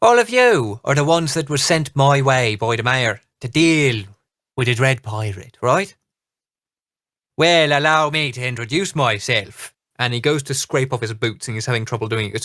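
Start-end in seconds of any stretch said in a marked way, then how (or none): 0.0-9.7 put-on very thick, heavy brogue accent. Narrating a game scene, voicing a stranger greeting the group, in a thick brogue accent. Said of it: "a very thick brogue comes out".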